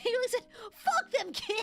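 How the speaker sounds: talking through laughter. Joking about Anakin, then catching yourself: laughing while talking. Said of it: "I shouldn't laugh".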